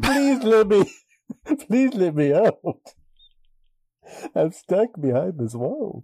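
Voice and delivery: muffled character voice, pitched high. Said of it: "but I'm stuck in a wall".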